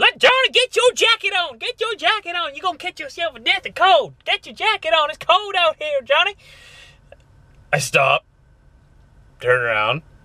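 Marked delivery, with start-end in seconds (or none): 0.0-6.4 put-on, very high, fussing holler. Speaker retells a lady at a truck stop yelling at her kid: imitating a woman yelling. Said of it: "just yelling at her kid".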